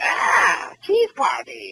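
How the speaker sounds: mock cartoon-style scream. Retelling a funny cartoon shrimp's line: imitating a screaming shrimp. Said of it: "he, like, yells and he screams. He goes like".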